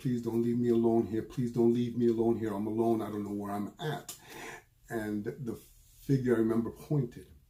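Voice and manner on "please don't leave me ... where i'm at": play-acted desperate begging, over and over. Retelling a dream, begging a spirit: imitating own begging. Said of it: "And I begged it".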